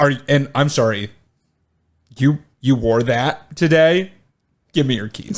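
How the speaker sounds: mock attitude, put-on sassy tone. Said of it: "with an attitude".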